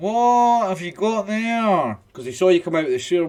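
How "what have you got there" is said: nasal voice, spoken through a pinched nose. Game master voicing a guard who saw someone leave the sewer: holding his nose. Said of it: "holding his nose".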